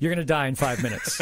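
ordinary talk

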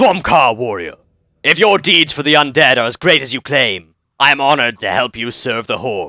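clumsy, bad attempt at an orc voice. Reading a game character's quest dialogue aloud to viewers, bad orc voice. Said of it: "an attempt at my orc voice".

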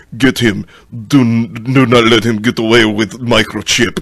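put-on generic Eastern European tough-guy accent. Describing action-movie thugs spotting the hero, nondescript eastern european accent. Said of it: "The nondescript Eastern European".

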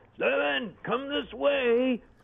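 high, drawn-out, far-carrying yell. Stefan retells the cinematographer calling to him from the alley's far end, retelling a yell. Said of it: "he yells out at me".

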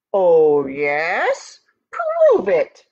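slow, swooping growl with "yes" drawn out. Reading a story, Goat answers Ant's insult, growled. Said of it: "growled Goat".

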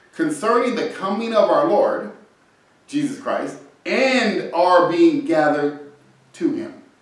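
slow, careful, unhurried, word-by-word reading. Speaker reads a scripture verse aloud to hang on every word: slow, careful reading. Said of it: "So let's read it slowly".

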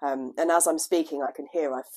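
low, deepened voice.

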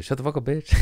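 playful, joking put-on voice. Retelling what he said on camera, acting out a playful jab. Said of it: "You know, like funny".

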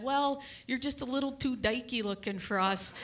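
ordinary talk, nothing marked

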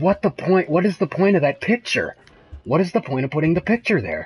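frightened voice. Playing a horror game they find terrifying, speaking in a scared voice. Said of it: "My voice getting".

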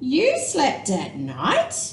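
with a gasp. A bat in the crowd hears a young bat's story and gasps. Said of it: "gasped another".

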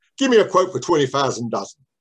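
put-on thick, broad London Cockney accent. Retelling what Paul said after throwing over a game box, in Paul's broad Cockney accent. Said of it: "in a broad Cockney accent".

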